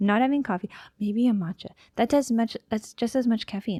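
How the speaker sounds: rushed, rapid, rattled-off, tumbling-out chatter. Self-described millennial rambling to listeners, talking really fast. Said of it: "I'm talking really fast".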